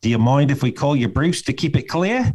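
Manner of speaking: put-on Australian accent. Showing the practice phrase they use for an accent, australian accent. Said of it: "the one that I use for Australia is this".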